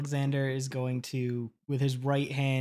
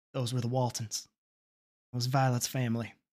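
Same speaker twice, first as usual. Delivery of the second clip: restrained, held-back, low-key, subdued. Alex, spun around by Atticus and asked who that was, answers kind of quietly. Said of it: "Alex will say kind of quietly".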